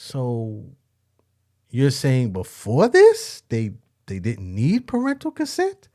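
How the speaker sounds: astonished voice. Reacting to a news report about parental consent: shocked, raised pitch. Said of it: "the pitch in my voice was the same shock".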